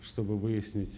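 normal talking voice

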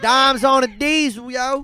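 very loud, put-on Baltimore street accent. Telling a story, the speaker acts out a line in a Baltimore street accent. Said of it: "I fucking brushed up on my Baltimore accent".

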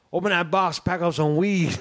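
put-on Cajun accent. Retelling a pizza delivery, quoting the customer at his family reunion: imitating Beans's Cajun accent. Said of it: "sounded Cajun".

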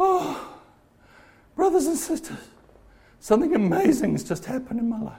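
weepy, blubbering, tearful crying voice. Acting out an imagined churchgoer standing up on Sunday before the church, mock crying. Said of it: "gets up and he's crying".

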